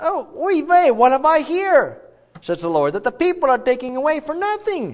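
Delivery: Yiddish-inflected voice, pitched high.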